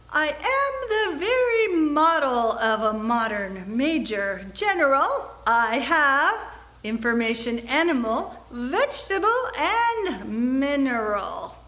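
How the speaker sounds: see-saw pitch with am stretched out. Demonstrating pitch variety on a tongue twister, varied high and low pitch. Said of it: "it's the variety between high pitch and low pitch, and I'll just demonstrate that".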